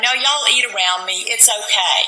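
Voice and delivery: ordinary talk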